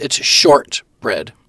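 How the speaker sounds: short in shortbread stressed and drawn out slow. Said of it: "Emphasis on the word short".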